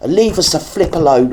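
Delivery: angry, dismissive tone.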